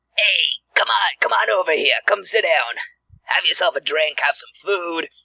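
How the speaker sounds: put-on welcoming goblin voice with a Brooklyn accent. A game master voices goblins seated at a table, Brooklyn-sounding goblin voice. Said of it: ""We're like [name] goblins." But for some reason, we're like from Brooklyn or something, because [name]'s not great at goblin voices. / we're like from Brooklyn or something, because [name]'s not gr".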